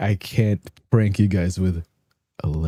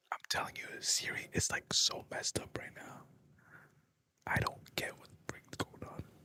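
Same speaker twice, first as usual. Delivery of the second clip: whispered, very quiet, barely audible. Talking about the phone, worried it may be listening: whispering. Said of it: "I'm gonna whisper because I'm pretty sure my phone is gonna hear me".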